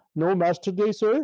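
put-on Indian accent. Retelling what the gas station guy said: imitating an Indian accent. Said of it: "he's an Indian guy with an accent".

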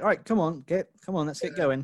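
upbeat, peppy, hurried, rousing delivery. Imagining Kevin Hart urging a housemate to do the dishes: peppy Kevin Hart impression. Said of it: "he could be quite peppy and be like".

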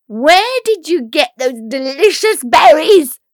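shrill, very loud screeching at top volume. In a read fairy tale, Helena confronts the girl she has grabbed: Helena screeching. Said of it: "screeched Helena".

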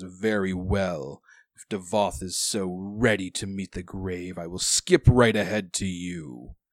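slow, seething, enraged villain voice. Voicing an enraged foe who turns to face a player: enraged villain voice. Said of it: "he just has rage in his face now, and he says".

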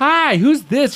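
put-on high, slow old lady voice.

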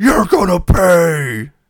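booming, very high yell, drawn-out "pay". Recounting a wrestling match, yelling at Hogan in a Giant voice. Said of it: "in his best Giant voice, yells".

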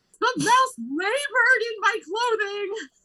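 mock distraught outburst. Retelling what a woman said when she was upset, retelling her upset outburst. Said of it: "Which she was upset about. But then she's like".

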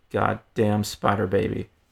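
quiet muttering under the breath. Reading a story line muttered on the playground at recess: muttered under breath. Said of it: "mutter under her breath".

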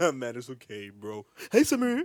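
casual, relaxed, drawn-out, swooping voice. Retelling how a friend answered on FaceTime: imitating a friend. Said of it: "That's literally how he sounded".

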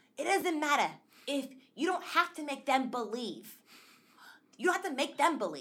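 loud dramatic New York voice.

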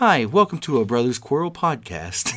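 put-on public radio announcer voice. Joking about ASMR, a podcast host greets listeners in an NPR voice. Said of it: "talking in NPR voices".

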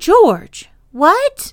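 very high, shaky, trembling, wavering voice. Nanny asks George what he means, in rather a shaky voice. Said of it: "said Nanny in rather a shaky voice".

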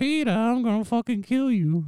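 snippy, snapped out, very high. Comparing herself to a cartoon wife, quoting her: snippy Lois voice. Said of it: "I'm like Lois when she's like".

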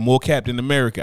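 ordinary talk

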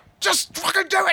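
put-on exasperated butler voice, very high. Retelling a butler struggling to pull the curtains shut: imitating a frustrated butler. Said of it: "he just gets so frustrated".

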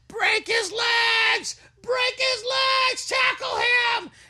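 very high, slow, drawn-out screaming. Reminding someone how they stood on a hotel bed, retelling screaming at the tv. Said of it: "You were standing on the corner of the bed screaming at the TV".

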